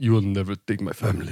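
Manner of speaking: put-on, fake Russian accent. Voicing a dying hog's last words as a joke: put-on Russian accent. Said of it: "I wonder if they have Russian accents".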